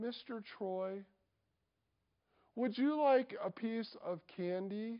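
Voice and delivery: put-on sweet, innocent, tiny little-girl voice. Retelling how a junior girl at camp offered him candy: sweet little girl voice. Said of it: "with such a sweet little voice and said".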